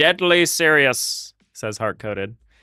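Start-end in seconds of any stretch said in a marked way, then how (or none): 0.0-1.3 clumsy put-on character voice, pitched high. Reading a chat comment aloud, trying The Monarch voice. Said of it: "I was trying to do, like, a Monarch".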